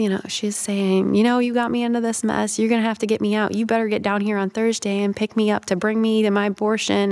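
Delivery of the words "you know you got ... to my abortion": plain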